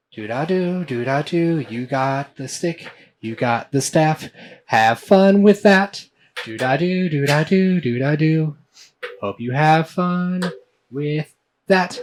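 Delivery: tricky little voice. A game master voices a voice in a player's head, tricky little voice. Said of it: "you hear a trickery little voice in your head".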